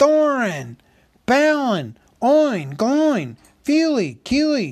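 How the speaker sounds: very high, drawn-out, full-voice shouting. Alone in the dark after his torch goes out, he calls out names, crying out as loud as possible. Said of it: "he cried, as loud as he could".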